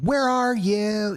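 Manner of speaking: very high, searching voice calling out into distance. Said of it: "And he's just like".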